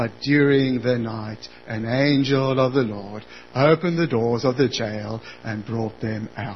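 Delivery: very low, lifeless, flat deadpan monotone drone. Reading the account with no emotion put into it, flat monotone. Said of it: "imagine it read in a monotone".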